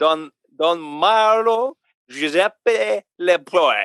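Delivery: very slow, put-on French accent. Apologizing in advance, the speaker reads out a name in a mock French accent. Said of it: "you're going to read it in a French accent".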